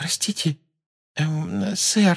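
timid, very high little voice. Parvati raises her hand to ask a question, timid. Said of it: "робко спросила Парвати".

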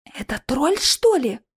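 puzzled, surprised, wondering tone, caught off guard. Narrator reading a character's reaction to a polite stranger, quietly surprised. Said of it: "тихо удивилась Алиса".

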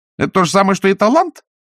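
high, snappish, snapped-back tone. In a read story, a young woman answers a man's question, snapped. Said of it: "огрызнулась Агнеса".

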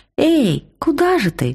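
very high, slow, drawn-out, biting sarcastic shout. A girl calls after a student hurrying away, mocking shout. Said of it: "язвительно крикнула Велька ему вслед".

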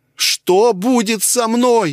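very high, loud squeak, close to crying. Reading Kirill's reply to the commanding voice in his head: squeaking, almost crying. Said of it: "уже чуть ли не плача пропищал Кирилл".

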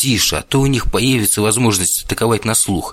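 ordinary delivery

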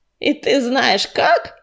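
snarling voice through bared teeth. Korshun, challenged by Motylinka, snarls back at her. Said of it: "оскалился Коршун".

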